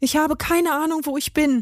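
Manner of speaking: high, stammering, tripping over words. Willi answers the tabby cat intruder's question, stammering. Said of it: "stotterte Willi".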